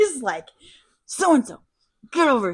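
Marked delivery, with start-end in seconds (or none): 1.1-2.5 raised voice, spoken through clenched teeth. Retelling how a mad cop called his wife over, imitating talking through teeth. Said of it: "he starts like talking through his teeth".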